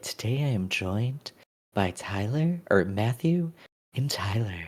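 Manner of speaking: soft, hushed voice like an ASMR video. Teasing a co-host about how he introduces their guests, imitating co-host's ASMR voice. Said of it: "like your A S M R voice".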